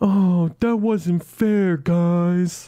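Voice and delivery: very slow, pouty grumbling tone. Mocking Steam's reaction to a swipe from Epic, mock-pouty Steam impression. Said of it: "they were pouty".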